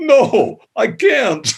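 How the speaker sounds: talking through a burst of laughter, very high. Retelling a reply to a request for a bigger voice: imitating Chuck laughing while talking. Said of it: "he just burst into that laugh of his, like".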